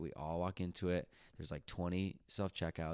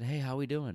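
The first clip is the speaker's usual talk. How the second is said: pointedly polite, loud, pitched-up, passive-aggressive tone; 8 semitones higher, 5 dB louder than usual. Retelling greeting a man standing too close: retelling a passive-aggressive greeting. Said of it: "my passive aggressive way of saying".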